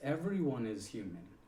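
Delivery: strong stress on everyone, pitch falling afterward.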